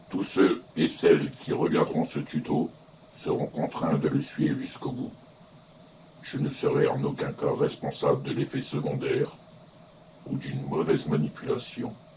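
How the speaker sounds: low, solemn announcer voice.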